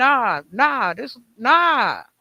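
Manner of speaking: very slow, stretched-out, drawn-out yelling. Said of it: "as I was screaming".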